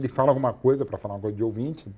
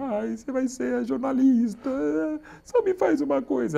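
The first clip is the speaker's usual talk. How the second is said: put-on voice talking while crying, tearful, pleading, higher; 13 semitones higher than usual. Retelling what the mother said about becoming a journalist: imitating mother talking while crying. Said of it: "Elas falam assim mesmo, chorando".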